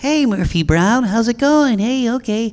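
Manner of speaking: very high, over-the-top, exaggerated put-on voice. Voice actor recalling his early career, demonstrating an exaggerated character voice. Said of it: "it was all about the character voices".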